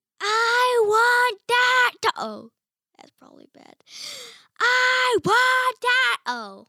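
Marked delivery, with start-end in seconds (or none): 4.6-6.2 yelled, much slower. Retaking a line after the first try sounded bad, yelled. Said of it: "you don't have to yell".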